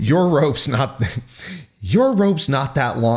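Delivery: reading through laughter. Reading a line of dialogue aloud and trying to continue: laughing while reading. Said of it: "I can't say it without laughing".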